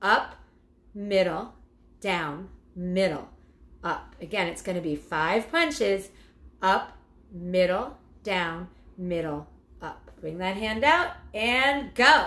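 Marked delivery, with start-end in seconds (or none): 0.0-4.1 slow, deliberate, each word spaced and measured. An instructor calls out the hard punch combination to the class, said slowly. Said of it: "I'm going to say it slow".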